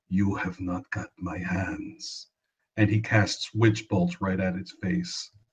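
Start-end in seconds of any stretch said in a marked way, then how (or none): 0.1-2.2 tender, gentle, soft half-whisper with no voice. Player voicing Davik as he speaks to the beast, gentle half-whisper. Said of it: "he gently whispers to the beast".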